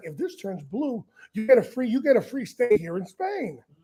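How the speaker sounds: acted-out sarcastic, swooping sing-song tone. Retelling what a customs inspector says to a suspect: imitating a sarcastic inspector. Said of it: "He's the most sarcastic prick".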